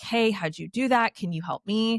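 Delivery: ordinary delivery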